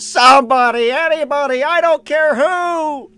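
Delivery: very high, very slow wail, who drawn out. Retelling a cartoon scene of crying for help: Squidward screaming for help. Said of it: "you just hear Squidward go".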